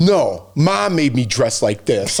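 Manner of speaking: acted annoyed, mad, very slow, very drawn-out delivery. Retelling a boy's complaint about his outfit, imitating him being mad. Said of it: "he was all mad about it".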